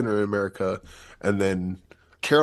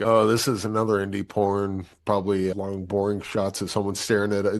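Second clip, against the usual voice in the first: ordinary talk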